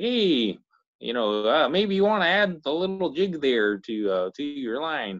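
put-on coach voice, vague Midwestern accent. Imitating Coach Z from the fishing show: Coach Z impression. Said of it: "But he's like".

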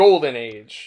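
mocking delivery. Discussing a line they like, acting out Stilgar's mockery. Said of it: "he says like mockingly".

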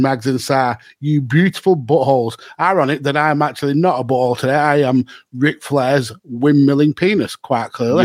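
plain

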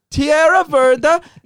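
hammy put-on Italian accent.

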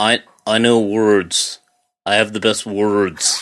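loud, slow, deliberate boastful tone, leaning in. Doing another Trump impression on request: Donald Trump impression. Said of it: "let's hear another Trump".

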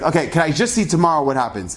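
ordinary talk, nothing marked

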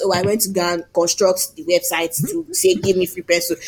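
ordinary delivery

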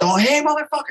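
acted, high-pitched full scream. Retelling screaming from his balcony at a driver doing burnouts, retelling his own scream. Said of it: "I'm screaming".

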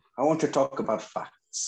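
bad, high-pitched attempt at a Spanish accent. Announcing an impression of a football manager, attempting a Rafa Benítez accent. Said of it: "I'll try and do some sort of accent".

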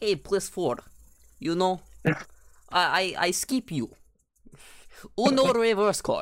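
put-on Russian accent. Recalling talking the entire time like this, speaker uses a put-on russian accent. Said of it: "I was talking like this".

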